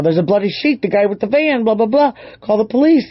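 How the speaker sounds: put-on freaked-out, frantic yelling, high and rushed. Retelling a frantic couple at a farmer's door: imitating someone yelling. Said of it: "they're just yelling".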